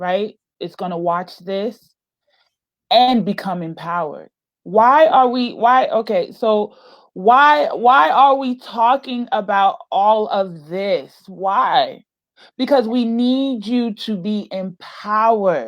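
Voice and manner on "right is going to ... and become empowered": low, rushed voice, fighting back tears. Speaking to viewers watching this, fighting back tears. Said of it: "I am I am fighting back tears".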